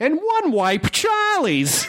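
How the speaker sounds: put-on very high, swooping old-time mobster voice. Reading an ad, saying the product's name in a 1930s gangster voice. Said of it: "I'm going to do in like a 30s gangster voice".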